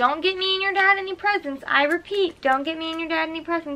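toned-down high yelling. Retelling what her mom yelled at her, retelling a yell. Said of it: "she actually just yelled at me and said".

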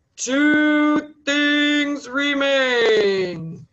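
pronouncing voice of a sky god, Two drawn out. Narrating a story, voicing the great god of the sky: [name]'s loud, deep voice. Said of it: "in his loud, deep voice".

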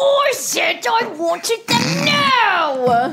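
put-on very high, shrill, furious English accent, long now. Asked by the other speaker to imitate them being angry, giving a mock-angry impression. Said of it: "Do me being angry".

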